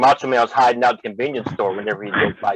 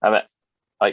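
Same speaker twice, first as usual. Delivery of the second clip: ordinary talk, nothing marked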